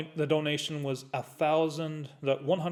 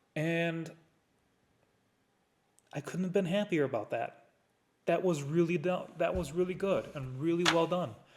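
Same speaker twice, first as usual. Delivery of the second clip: voice choking up a little with emotion. Remembering a charity donation total, choking up a little. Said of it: "I'm choking up a little bit".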